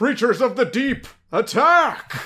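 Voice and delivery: very high, loud heroic voice. Retelling a show gag where a senile hero switches voices: imitating a hero persona voice. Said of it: "change the voice".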